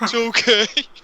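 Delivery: fake crying voice. Retelling the Return of the Jedi scene after the Rancor dies: imitating a crying man. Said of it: "where the one guy's crying after the Rancor dies".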